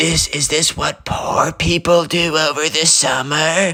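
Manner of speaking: put-on loud stage whisper. Retelling what the spoiled kid whispered to someone beside him: imitating a loud whisper.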